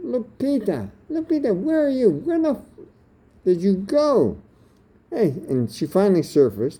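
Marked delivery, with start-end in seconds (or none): 0.0-4.4 mock very high calling shout. Retelling searching the street for a missing partner: retelling a yell. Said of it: "started yelling".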